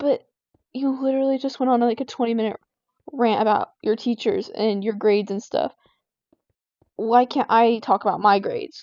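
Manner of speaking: ordinary talk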